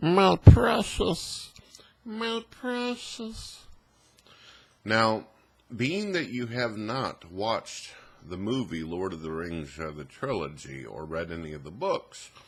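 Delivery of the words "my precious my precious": very high, loud, slow, stretched, shrill, booming creature voice. Explaining why someone is nicknamed after him, doing a Smeagol voice. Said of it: "Smeagol talks like this".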